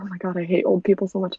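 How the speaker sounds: mock muttering under the breath. Describing a woman's habit, quoting what she says: retelling an under-breath mutter. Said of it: "Under her breath".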